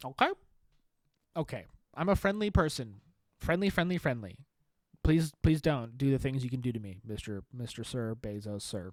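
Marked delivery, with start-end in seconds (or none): 5.0-8.9 fake frightened, cowering, begging-for-mercy pleading tone. Begging mister bezos not to hurt him: mock scared pleading. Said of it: "I'm so scared".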